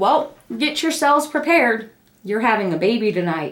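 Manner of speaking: usual speaking voice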